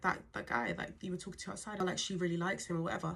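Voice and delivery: ordinary talk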